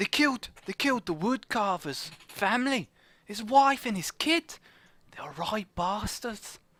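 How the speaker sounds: Scottish-tinged attempted Cockney accent. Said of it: "a Scottish person trying to do Cockney".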